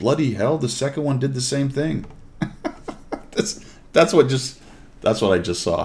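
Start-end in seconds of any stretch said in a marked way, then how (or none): 0.0-2.1 put-on high, sarcastic male voice, British accent. Retelling a British guy's remark as he sat there, imitating a sarcastic Brit. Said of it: "one of the Brit guys sarcastically sitting there says".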